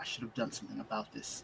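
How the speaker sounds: breathy, whispered mutter under the breath. Reacting in character to what is seen in the building: muttering under breath. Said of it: "under my breath".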